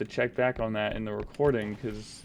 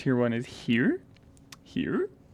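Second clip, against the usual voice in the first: raised voice, ratcheting steadily higher; 3 dB louder than usual. Still unsure where their tier one is, the speaker asks again, raising voice. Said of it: "I'm raising my voice".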